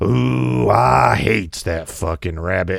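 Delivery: slow, raspy, angry cartoon cowboy voice. Recalling a voice actor slipping a curse into a cartoon: Yosemite Sam voice. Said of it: "him doing Yosemite Sam and going".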